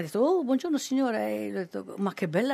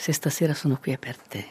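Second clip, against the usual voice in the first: sultry, sensual, seductive tone; 5 semitones lower than usual. Asked for an example of a sensual voice, the speaker demonstrates one: sensual voice. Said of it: "ci fa un esempio di voce sensuale".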